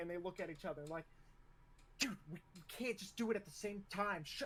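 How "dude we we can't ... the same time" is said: high-pitched, feisty, squabbling, bickering tone. Describing two men who introduced themselves at once, the speaker retells a bickering remark. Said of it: "immediately start going at it".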